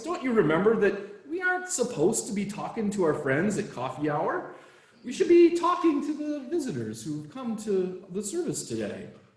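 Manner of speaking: mock sugary-sweet, perky, gentle voice. Storyteller quoting the board president speaking to Bob: retelling in a very sweet voice. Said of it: "in a very sweet voice".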